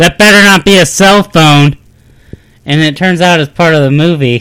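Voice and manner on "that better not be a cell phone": rude, loud, high, angry bellowed shout. Retelling a moviegoer's outburst in a quiet theater: imitating someone shouting loudly. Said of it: "real loud".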